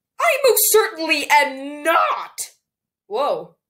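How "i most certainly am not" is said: voice suddenly breaking, unplanned. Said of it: "My voice just went full [name] there".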